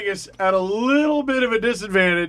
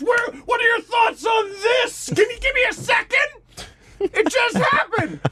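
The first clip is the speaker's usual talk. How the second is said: high, slow, frantic mock reporter voice. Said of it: "mock reporter chasing a sound bite".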